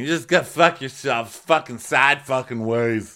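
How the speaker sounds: loud, full-throated, raging scream. Retelling how Justin kept screaming while being put to bed: retelling a scream. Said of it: "he's still screaming".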